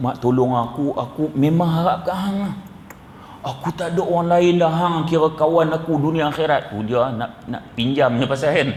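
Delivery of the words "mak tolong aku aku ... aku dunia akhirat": wholly earnest, pleading intonation. Acting out someone asking a friend to lend money, in a mock pleading tone. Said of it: "ni intonasi nak minta ni kita".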